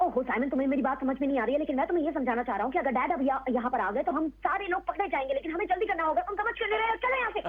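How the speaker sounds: rapid-fire, sped-up cartoon chipmunk chatter. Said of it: "ऐसे फट फट फट फट फट".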